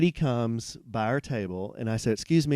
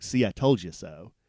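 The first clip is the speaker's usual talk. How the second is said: curt, terse, snippy, rude; 4 semitones lower than usual. Retelling what a server said: imitating someone speaking tersely and rudely. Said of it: "she said it to me very tersely, very rudely".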